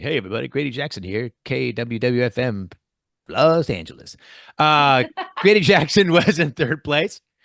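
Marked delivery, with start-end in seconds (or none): 0.0-4.2 on-air FM radio DJ patter. Host announcing contest results, imitating Grady Jackson, FM DJ. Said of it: "sounds kind of like an F M D J".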